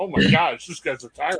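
normal talking voice

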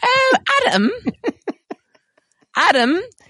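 put-on high British old-lady character voice. Trying to say a name, accidentally sounding like a Monty Python old lady voice. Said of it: "the only accident I know how to do is just sound like an old lady".

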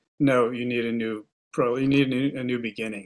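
ordinary delivery

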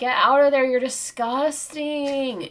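mock scolding, loud, high yell. Recounting telling her to get out, retelling own yell. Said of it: "And I'm like yelling at her".

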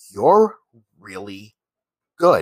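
dry, deadpan, no-nonsense, dead straight delivery. Retelling what the woman he was paying told him, imitating a deadpan reply. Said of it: "she looks at me deadpan".

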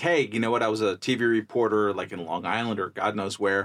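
normal talking voice

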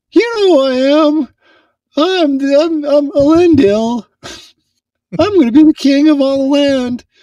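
very high voice, straining for a crack. Playing Elendil speaking in the scene, Elendil trying for a voice crack. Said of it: "I'm trying to get my voice to crack".

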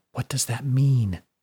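whispering. A character whispering a question to another character. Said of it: "Whispered Fiona to Brody".

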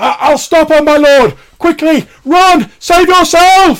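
shrill, very loud, high-pitched yelling. Voicing a blind old vagrant warning his lord: loud shout in character. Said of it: "He shouts very loudly".

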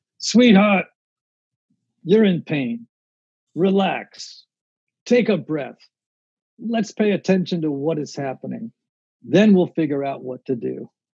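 put-on New York Brooklyn accent. Quoting what a friend tells anxious people, the way she sounds: imitating a Brooklyn accent. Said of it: "I'm going to give it to you the way you hear it".

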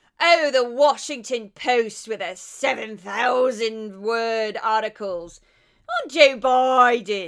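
put-on very loud, slow, angry, thick Australian accent. Retelling an angry remark by reporter Miranda Devine: Miranda Devine impression, thick Australian accent. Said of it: "I kinda can't help but kinda go into her".

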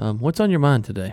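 host-style public-radio announcer on-air delivery. Putting on an NPR voice to ask a question. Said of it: "That's my NPR voice".

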